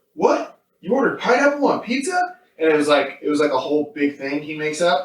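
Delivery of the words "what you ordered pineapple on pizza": mock-outraged freakout, much higher pitch. Retelling a show scene, playing the husband reacting to the pizza: retelling an outraged freakout. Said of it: "Why are you freaking out so much?".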